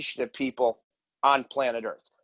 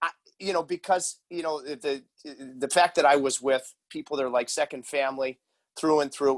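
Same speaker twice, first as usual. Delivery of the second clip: plain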